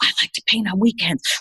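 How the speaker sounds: confessional, confiding, let-you-in-on-it tone. Retelling what people at talks said afterwards: imitating hushed tones. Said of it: "in hushed tones".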